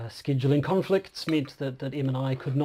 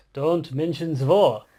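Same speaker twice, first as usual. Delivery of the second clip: deliberately bad put-on German accent; 6 dB louder than usual. Reenacting a favourite Fawlty Towers scene, in a bad German accent. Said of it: "bad German accent".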